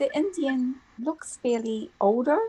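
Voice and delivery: ordinary talk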